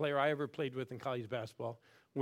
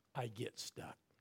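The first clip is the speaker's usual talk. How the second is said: hushed whisper under the breath; 2 semitones lower, 11 dB quieter than usual. Showing the listeners how to say the line: whispering. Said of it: "I want you to whisper".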